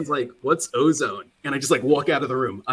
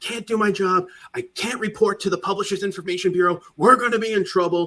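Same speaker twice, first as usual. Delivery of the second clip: worked-up, frantic, high-pitched agitated ranting; 6 semitones higher than usual. Retelling a coworker's outburst over a broken mouse: imitating someone yelling and screaming. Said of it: "yelling and screaming".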